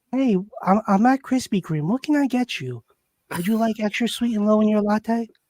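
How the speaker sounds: polite phone-conversation voice. Mocking how the other speaker talks on the phone, imitating his phone-conversation voice. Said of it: "that's his phone conversation voice".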